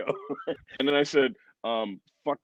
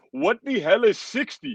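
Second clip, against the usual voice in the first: high-pitched put-on foreign voice; 9 semitones higher than usual. Talking about people dying at sixty, the speaker mimics people in other countries. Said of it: "Why did you do that voice?".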